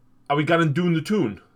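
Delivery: clumsy put-on Geordie accent, high and loud. Discussing regional accents with another speaker, trying a bad Geordie accent. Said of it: "That's a Geordie, and that's a bad impression".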